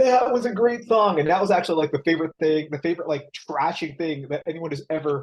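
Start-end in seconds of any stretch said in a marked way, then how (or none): 0.0-1.2 mock drunken yell, much higher. Recalling someone behind them at a concert, imitating a drunken yell. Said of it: "someone yelled like drunkenly behind me".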